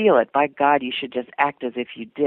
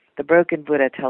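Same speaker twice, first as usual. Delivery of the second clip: ordinary delivery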